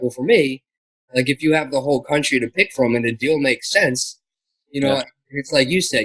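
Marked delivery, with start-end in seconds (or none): none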